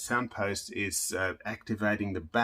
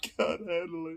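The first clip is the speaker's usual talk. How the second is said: high, put-on, fake sobbing; 8 semitones higher, 3 dB quieter than usual. Speaker testing a violin fitted with two soundposts: mock crying. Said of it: "(mock cries)".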